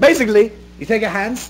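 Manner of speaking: put-on Australian accent.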